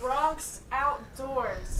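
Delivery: very loud, projected, carrying public-address voice. Repeating a name after being told to speak up: speaking up loudly through cupped hands. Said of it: "Megaphone hands".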